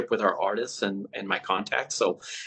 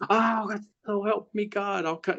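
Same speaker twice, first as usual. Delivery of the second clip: very high, slow, drawn-out, furious, enraged delivery; 11 semitones higher than usual. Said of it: "He sounded like [name] from Slipknot when he gets pissed".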